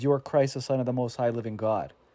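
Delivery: plain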